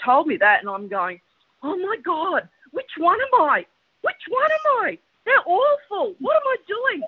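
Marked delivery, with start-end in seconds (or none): 1.6-7.0 put-on very high, drawn-out panicked voice. Speaker retells reacting to being labelled by a woman; retelling freaking out. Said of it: "So I'm freaking out".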